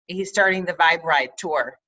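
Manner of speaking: ordinary talk, nothing marked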